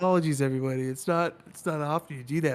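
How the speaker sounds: speaking while crying with laughter. Apologizing to everybody after the jokes told at break, laughing to tears. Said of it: "I'm literally crying right now".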